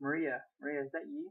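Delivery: plain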